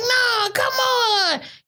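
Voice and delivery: high-pitched, slow, drawn-out pleading voice. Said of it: "she was like".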